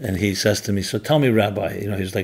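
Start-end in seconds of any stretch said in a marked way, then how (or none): none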